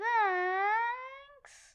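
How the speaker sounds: sweet, high, drawn-out, honey-sweet voice. Telling others how Daisy thanked the speaker for a Valentine: imitating Daisy's honey voice. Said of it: "It was more like".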